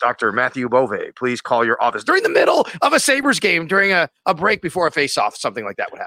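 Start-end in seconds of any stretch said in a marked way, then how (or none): 0.0-2.1 put-on public address announcer voice. Retelling an arena announcement from a game: imitating announcer Milt Jaffe. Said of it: "the guy with the great voice".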